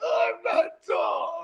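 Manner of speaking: play-acted, very slow, drawn-out tearful sob. Retelling how she cried, unable to reach something: imitating someone crying. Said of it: "She's in there crying".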